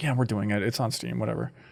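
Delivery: low-key, hushed, soft stage whisper. Imitating a quiet, barely acknowledged game release: imitating a half-whisper. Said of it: "whispered, like".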